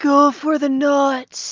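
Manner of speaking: whispered aside. Whispering an aside to a teammate during a fight: whispering to a teammate. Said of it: "I, like, whisper it to you".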